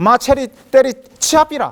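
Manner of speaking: Gyeongsang regional accent. Quoting a phrase in gyeongsang dialect while talking about love. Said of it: "경상도 사투리로".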